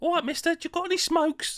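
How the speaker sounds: put-on very high Victorian urchin accent. Imagining a ten-year-old asking a man for smokes, sort of Victorian kid voice. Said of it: "in a sort of Victorian".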